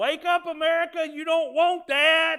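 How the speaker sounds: shrill, very loud, high, drawn-out top-of-lungs shout. Describing people abroad warning America, acting out their cry: retelling a shout. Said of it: "shouting at the top of their lungs".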